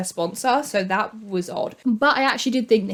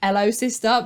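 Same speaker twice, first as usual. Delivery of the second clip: put-on British accent; 2 semitones higher than usual. Quoting the character's line: Alex Drake's British accent. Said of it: "That British accent cracks me up".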